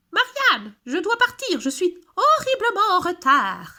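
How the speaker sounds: high-pitched storybook rabbit voice. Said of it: "Une voix aiguë se fait entendre".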